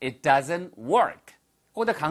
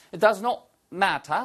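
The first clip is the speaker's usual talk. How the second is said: British-style pronunciation with pitch raised; 5 semitones higher than usual. Language lesson speaker demonstrating British pronunciation of a phrase, British accent. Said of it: "이것도 역시 똑같이 영국식 발음이잖아요".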